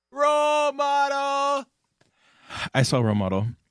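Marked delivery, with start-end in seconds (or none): 0.2-1.7 very high, excited, shrieking scream. Radio host, after warning listeners to turn speakers down, screaming excitedly. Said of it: "I'm done screaming".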